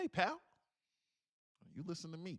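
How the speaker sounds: put-on high swooping voice. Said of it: "You don't sound like that".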